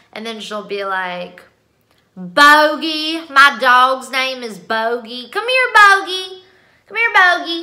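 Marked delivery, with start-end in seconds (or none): 2.2-7.7 put-on loud, thick southern accent, one word drawn out. Imitating a woman calling her dog, in a strong southern accent. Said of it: "She has a really strong southern accent".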